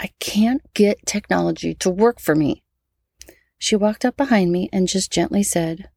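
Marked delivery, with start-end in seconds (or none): 0.0-2.6 irate, fed-up, frustrated blurted outburst. A mother retells what she blurted out at the computer: retelling an irate outburst. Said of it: "In my very irate voice".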